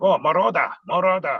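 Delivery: put-on heavy, laid-on Spanish accent. Retelling an old acquaintance greeting him at a show, in a heavy Spanish accent. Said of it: "he had a heavy Spanish accent".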